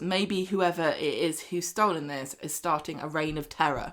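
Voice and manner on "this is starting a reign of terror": ordinary talk, nothing marked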